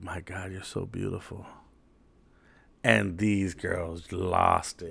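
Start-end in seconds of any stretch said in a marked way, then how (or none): 0.0-1.5 soft, very quiet, barely audible half-whisper. Retelling how a friend half-whispered in a girl's ear: imitating a half-whisper. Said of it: "he whispers in this girl's ear".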